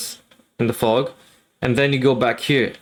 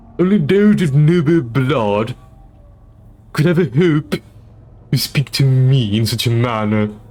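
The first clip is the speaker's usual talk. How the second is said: loud, slow, deliberate voice with pinched nose; 5 dB louder than usual. Speaker pinches their nose to sound like Stewie: nasal Stewie voice. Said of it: "If I do my nose like this".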